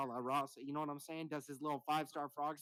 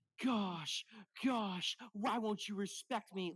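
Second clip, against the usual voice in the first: mock tearful, blubbering, high, slow crying whine; 6 semitones higher than usual. Retelling how Cody Rhodes got to the top: mock crying as Cody Rhodes. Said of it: "he cried about his dead dad".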